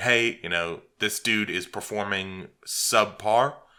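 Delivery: plain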